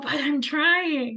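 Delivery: mock strained, pained, pleading tone. Retelling how people answer when told to meditate: imitating a pained client. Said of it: "they get this really pained look on their face".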